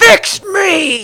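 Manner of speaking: shrill, very loud, high-pitched shout. Voicing a creature answering a player's plea: shouting. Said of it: "she just shouts at you".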